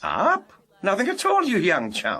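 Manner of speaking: feigned innocence, sing-song, innocent who-me tone. Answering a question on a phone call with an innocent "who me" tone. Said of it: "that "who me" tone in your voice".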